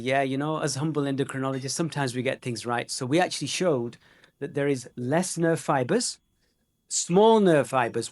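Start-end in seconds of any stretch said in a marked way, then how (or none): none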